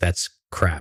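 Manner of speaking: ordinary talk, nothing marked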